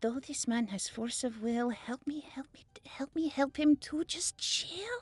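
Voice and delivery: muttered under breath. Casting a rhyming spell on a worried man: said under her breath. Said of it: "kinda says under her breath".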